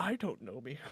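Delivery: whispering in a character voice. Playing a character at a drinking table, whispering in character. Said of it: "whisper to myself".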